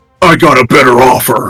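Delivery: put-on ogre warrior voice. Voicing an ogre with a great axe who greets Cassandra: ogre voice. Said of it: "you see the ogre kind of wielding the".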